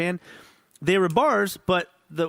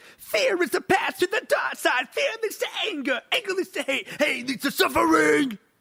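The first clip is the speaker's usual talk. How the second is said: read in a very high-pitched put-on voice; 12 semitones higher than usual. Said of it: "And [name] would say it like".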